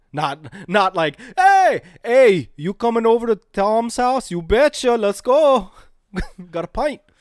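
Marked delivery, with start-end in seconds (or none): 1.3-6.9 put-on Canadian accent, very high and loud. Joking about parties in canada, the speaker does a canadian accent. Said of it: "that's not a terrible accent".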